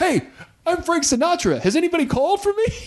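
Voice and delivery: very high-pitched, breathless gasp. Telling a joke's punchline, the speaker acts out a breathless arrival. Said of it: "breathlessly runs in and goes".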